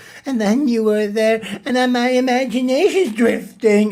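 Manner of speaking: put-on high, cracking, breaking teenage puberty voice. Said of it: "balls are about to drop puberty voice".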